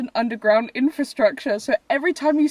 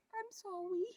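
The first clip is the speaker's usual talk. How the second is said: put-on baby talk, tiny, high and very hushed; 8 semitones higher, 21 dB quieter than usual. Imitating a boyfriend who apologizes when you're annoyed: baby voice. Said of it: "he talks in a baby voice and says".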